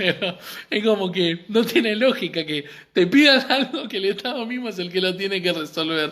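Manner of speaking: laughing through the words, unable to hold it in. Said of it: "perdón que me ría".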